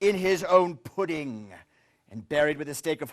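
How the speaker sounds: ordinary delivery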